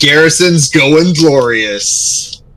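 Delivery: mild war cry in a character voice. Voicing a character landing a critical hit: in-character battle yell. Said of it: "I yelled".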